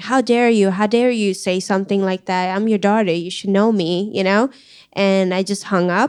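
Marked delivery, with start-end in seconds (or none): 0.0-4.1 acted-out, mock-upset outburst. Daughter retelling what she told her parent before hanging up, retelling an upset outburst. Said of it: "I just got so upset that I'm like".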